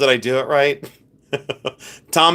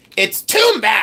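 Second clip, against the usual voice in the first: put-on insistent, high-pitched, drawn-out yelling; 8 semitones higher than usual. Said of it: "you don't have to yell it down my mouth hole".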